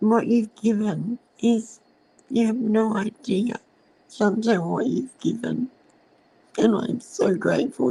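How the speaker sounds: speaking through tears, tearful and emotional. Speaker thanks a guest for telling her story, crying while speaking. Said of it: "even though I'm crying".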